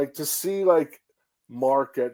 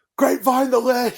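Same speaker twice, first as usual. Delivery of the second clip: put-on excited yell, much higher and louder; 11 semitones higher, 6 dB louder than usual. Recalling watching a wrestling match live, yelling at one point: retelling an excited yell. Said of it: "I'm yelling at one point".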